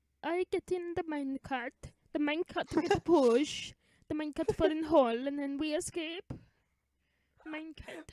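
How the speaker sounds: put-on high German kid voice. Acting out escaping in a minecart as Augustus Gloop. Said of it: "why did he sound like the fat German kid".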